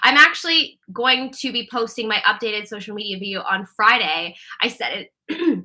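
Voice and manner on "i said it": voice cracking, breaking on a note mid-phrase. A streamer tells viewers about a video posting Friday, voice cracking. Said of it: "Whoa, my voice cracked".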